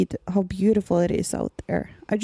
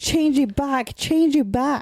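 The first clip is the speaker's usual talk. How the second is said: put-on terrified scream, higher; 5 semitones higher than usual. Retelling a comic scene where a character panics: imitating Cutter screaming. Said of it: "Cutter just screams".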